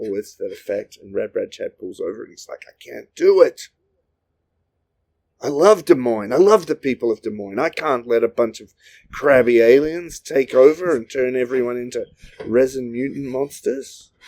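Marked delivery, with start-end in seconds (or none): 2.7-14.1 bad put-on American accent, laid on thick. Narrator voicing Rad Brad Chad pulling over outside Des Moines, bad American accent. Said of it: "Is that a Des Moines accent you're doing?".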